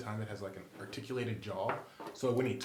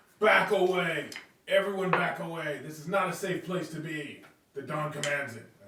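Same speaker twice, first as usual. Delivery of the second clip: loud, high, commanding shouting; 6 semitones higher, 7 dB louder than usual. In a role-playing game scene, a player's character is yelling commands. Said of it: "And I'm just like yelling".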